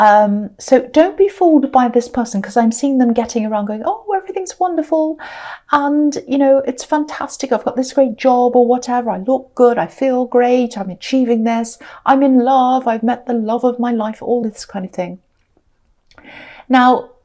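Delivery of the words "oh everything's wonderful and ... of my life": ordinary talk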